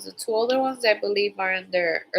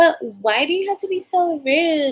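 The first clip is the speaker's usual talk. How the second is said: acted bratty child voice, high, loud, sassy; 8 semitones higher, 5 dB louder than usual. Imitating a child who has attitude: imitating a sassy child with attitude. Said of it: "has a little attitude".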